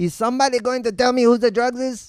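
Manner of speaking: put-on angry German accent. Retelling standing in a police lineup, imitating the cop: mock-angry cop, German-sounding accent. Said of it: "little angry Mexican cop who kind of sounded German".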